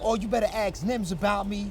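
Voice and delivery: ordinary talk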